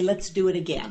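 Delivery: ordinary delivery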